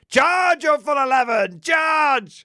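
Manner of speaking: shrill, very high, drawn-out shout. Narrating a wargame battle, the Castellan orders his men forward: retelling a shouted order. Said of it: "The Castellan shouts to his men".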